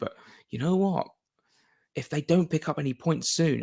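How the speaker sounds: secretive, hushed stage whisper. Predicting a football team's playoff chances to a co-host, half-whispering. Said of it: "I don't know why I'm whispering".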